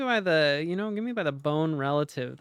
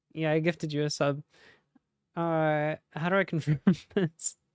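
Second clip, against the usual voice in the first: ordinary talk, nothing marked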